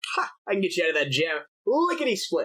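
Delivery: put-on halfling voice. Voicing a halfling who arrives to fix a jammed door, Conkabar Shurnstone halfling voice. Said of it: "a halfling arrive a few hours later".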